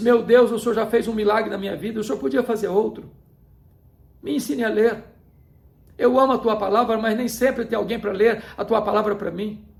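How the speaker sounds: tearful, crying, pleading tone. Retelling a mother's prayer to God asking to learn to read: retelling a tearful prayer.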